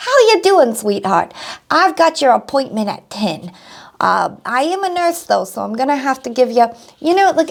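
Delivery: New York Brooklyn accent. Speaker imagining how a Nurse Becky would sound: Nurse Becky in Brooklyn accent. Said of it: "they have like a Brooklyn accent".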